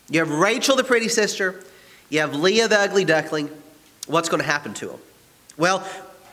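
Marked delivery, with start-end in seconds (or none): none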